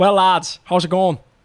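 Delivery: clumsy, loud, badly put-on Tipperary accent. Asked on a podcast whether they can do a Tipperary accent, bad Tipperary accent. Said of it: "asking me if I could do a Tipperary accent".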